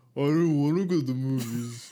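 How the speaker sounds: high-pitched, very loud, teasing, taunting voice. Showing the one voice used when impersonating someone: mocking impersonation voice. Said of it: "the only voice I do when I'm impersonating someone".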